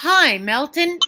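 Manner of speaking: loud, slow, drawn-out call.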